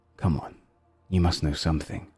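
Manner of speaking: low, hushed, flirty whisper. A narrator voices a flirting character overheard as you approach, whispering. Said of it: "you can hear their whispers".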